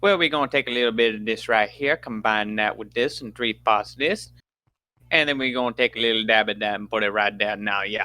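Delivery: put-on heavy, very specific, thick Cajun accent. Imitating a Cajun chef on a show explaining his cooking, thick Cajun accent. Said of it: "very specific thick Cajun".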